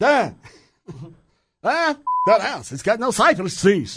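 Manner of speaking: slow, high, drawn-out vampire count voice. Imagining someone driving by the house and commenting, in a Dracula voice. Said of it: "Dracula's going to buy your house".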